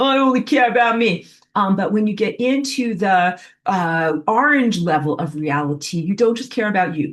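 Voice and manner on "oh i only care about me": tough street punk voice, slightly high. Voicing the microbe who only cares about himself, tough-punk Vinnie Barbarino voice. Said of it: "like some tough punk. He's like".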